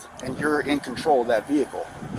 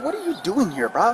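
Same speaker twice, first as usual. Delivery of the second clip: put-on very high, furious, angry outburst; 9 semitones higher than usual. Retelling how he popped off at the driver: retelling an angry outburst. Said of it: "So that's why I popped off and I said".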